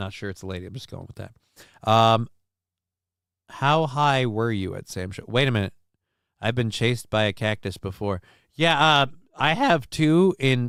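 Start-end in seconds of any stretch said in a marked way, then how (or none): 8.5-10.7 slow delivery, voice cracking partway through. Answering a question mid-conversation, with a voice crack. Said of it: "Goddamn voice crack".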